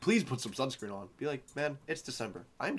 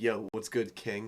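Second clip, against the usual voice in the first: sassy put-on voice, much lower; 2 semitones lower than usual. Joking about how a voice assistant talks to them, in a sassy street Alexa voice.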